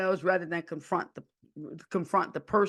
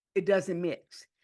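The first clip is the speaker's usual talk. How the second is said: normal talking voice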